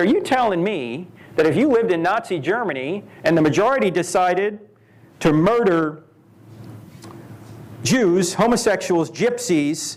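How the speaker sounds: usual speaking voice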